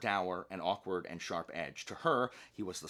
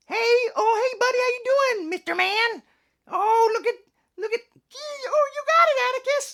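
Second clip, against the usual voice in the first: very high, very loud, gushing put-on voice; 13 dB louder than usual. Showing off another voice option, in an alternate put-on voice. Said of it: "Or I can use this one".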